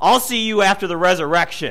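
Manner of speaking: clenched jaw, forced through teeth. Told not to react by the director, he finally turns to the man, retelling words through gritted teeth. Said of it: "through gritted teeth".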